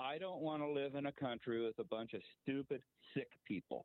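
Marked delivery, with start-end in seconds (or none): none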